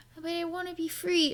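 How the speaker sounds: very high, soft, tiny innocent voice. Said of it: "this innocent little voice".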